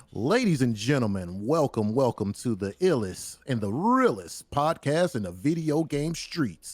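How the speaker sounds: slow, drawn-out hype announcer-style voice. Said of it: "I was trying to do my, like, um, D J drama intro".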